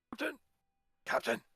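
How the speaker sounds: whispered speech. A player whispers to the captain during a role-play game: whispering. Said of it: "I'm gonna whisper to Prim".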